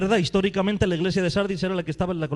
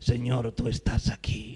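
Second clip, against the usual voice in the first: slow, affected, put-on pious, devout voice; 8 semitones lower, 6 dB quieter than usual. Acting out someone whose voice changes when speaking of God, put-on changed voice. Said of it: "cambia la voz y dice".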